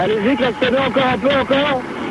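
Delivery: high-pitched calling out.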